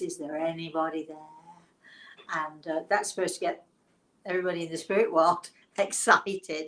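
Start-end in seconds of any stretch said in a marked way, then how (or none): 0.0-1.2 mysterious, trance-like séance medium voice. Acting out a medium in a trance at a table in a dark room, imitating a mysterious voice. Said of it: "in this sort of mysterious voice".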